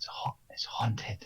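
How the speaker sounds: hushed, breathy whisper catching on a word. A character on the bridge moves closer to the listener, then says this whispering. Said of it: "he whispers um, and says".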